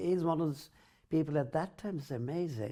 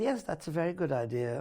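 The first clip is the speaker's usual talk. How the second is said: plain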